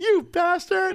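high-pitched yell.

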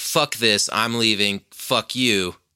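mock angry, furious outburst. Retelling how a woman quit her own podcast, mock-angry quitting outburst. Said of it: "she got so mad".

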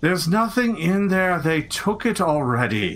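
downcast, disheartened, dejected man's voice. Narrating what the listeners hear a man say, in a dejected man's voice. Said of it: "a rather kind of dejected sounding man say".

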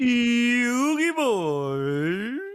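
high, drawn-out put-on cry. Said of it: "give me your best Yu-Gi Boy impersonation".

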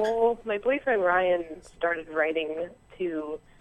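slow, deliberate, careful talk. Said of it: "I'll talk slower".

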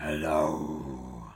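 low dragon voice. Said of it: "Was that your dragon voice?".

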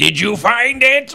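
thunderous, booming, very high and loud voice. In the game, Harbeck magically asks whether they found it, in a booming voice. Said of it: "create a booming voice and say".

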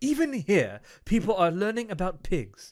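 bad English accent, high and swooping. Joking that people are learning about pigs: terrible David Attenborough impression. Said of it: "It's a terrible English accent".

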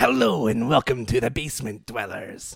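deep, sinister villain voice. A host, asked by his co-host for his best Joker, tries it: Joker impression. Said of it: "Your best Joker".

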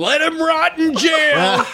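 put-on very high, slow, drawn-out background yelling. Recounting a call to mom at seventeen, acting out dad yelling in the background. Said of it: "my dad in the background just yelling".

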